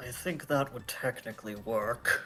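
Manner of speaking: whispering in character. Playing Eshe, going up to someone in the scene: whispering in character. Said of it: "Eshe goes up and whispers".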